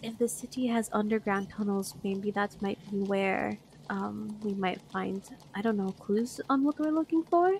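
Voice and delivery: hushed whisper in a character voice. Playing a character leaning to another's ear to share a secret: whispering in character. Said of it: "whispering, like, as hushly as I can".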